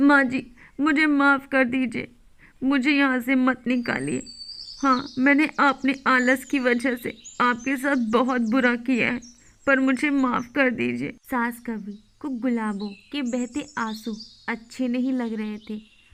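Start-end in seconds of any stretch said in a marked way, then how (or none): 0.0-11.1 weepy, tearful, pleading cartoon voice. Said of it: "cartoon l दुष्ट बहू lDusht Bahu lHindi Bird Stories l Jini Bird Jungle Toons (uploaded 2022) / मैं अकेली क्या क्या करूँ?".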